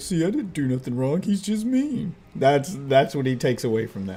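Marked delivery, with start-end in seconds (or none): 0.0-2.1 high, innocent, hard-done-by victim voice. Arguing about the dog that was scolded, voicing the dog as a victim. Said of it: "He's like".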